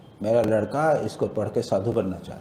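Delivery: normal talking voice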